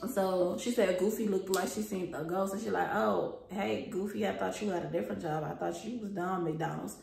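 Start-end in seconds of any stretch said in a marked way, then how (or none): none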